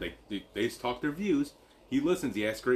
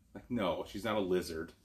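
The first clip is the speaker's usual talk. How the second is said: plain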